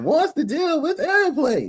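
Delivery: very high, swooping, sing-song comic whine. Quoting a comedian's catchphrase about airplanes: imitating a high-pitched voice. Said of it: "always talking that high-pitched voice like that".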